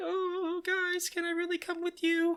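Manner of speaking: very high, tearful, sobbing voice. Retelling a story scene where a character starts crying: imitating Usopp crying. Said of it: "And Usopp starts crying".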